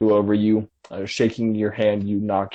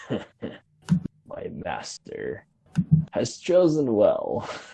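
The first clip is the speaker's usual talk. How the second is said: very slow, drawn-out snarling growl; 3 dB quieter than usual. Game master voicing a creature who tossed Shane to the ground, snarling at everyone. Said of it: "He snarls at all of you".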